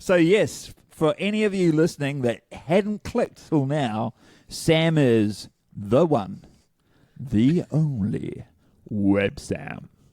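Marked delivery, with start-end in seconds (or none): 4.5-9.9 slow, creepy, drawn-out dramatic delivery. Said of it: "I don't know why he said it like that".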